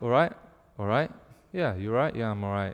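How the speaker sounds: low, slightly depressed, downbeat voice. Showing how people in the north of england greet each other, low, slightly depressed voice. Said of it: "low voice, slightly depressed".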